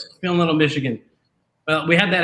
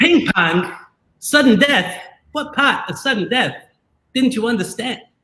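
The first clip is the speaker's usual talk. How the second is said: heavy put-on Boston accent over an impression voice, high; 8 semitones higher than usual. Joking about ping pong sudden death on the show, speak as Christopher Walken doing a Boston accent. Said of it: "better Walken and better Boston accent".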